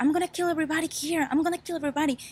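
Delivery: high, fast, threatening mock yell.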